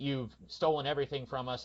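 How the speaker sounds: ordinary delivery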